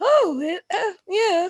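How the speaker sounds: mimicked voice going up in pitch. Imitating how the other player's voice rises when talking to her: imitating a voice going up. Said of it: "the tinder of your voice goes".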